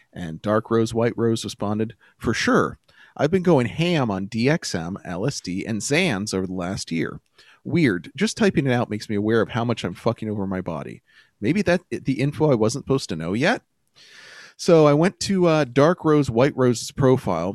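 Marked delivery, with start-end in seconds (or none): none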